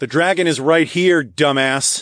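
snarky high-pitched jeer. The narrator calls out to the others, pointing to themself: sarcastic call-out. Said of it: "pointed to myself sarcastically".

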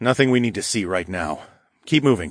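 plain

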